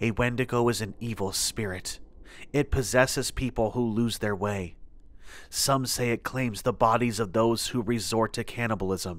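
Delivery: ordinary delivery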